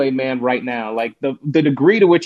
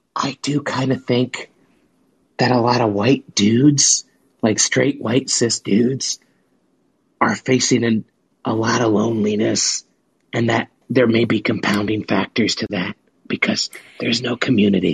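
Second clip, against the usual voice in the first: playful mock whisper, much lower in pitch; 3 semitones lower than usual. Confiding on a podcast to the other person there, in a mock whisper. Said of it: "I'm going to whisper this".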